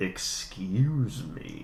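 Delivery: sultry, smooth, seductive put-on voice. Retelling a scene where a burp is covered up: imitating a sexy "excuse me". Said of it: "tries to cover it up in a sexy way".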